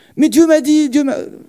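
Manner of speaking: acted high, worked-up agitation. Acting out an exchange, the speaker voices the one told to calm down; mock agitated protest. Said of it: "Calme-toi, calme-toi".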